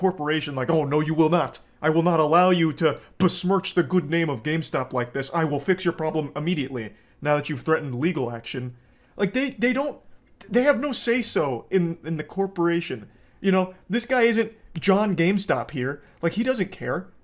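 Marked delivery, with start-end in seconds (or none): 0.7-8.7 mock, indignant voice. Mocking an employee who defends the company: imitating an employee defending the company. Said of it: "try and defend the company".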